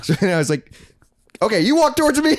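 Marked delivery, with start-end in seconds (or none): 1.4-2.4 high-pitched, shrill hollering yell. Retelling guiding a friend on the phone: imitating own yelling into a phone. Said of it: "like, yelling, but also on the phone".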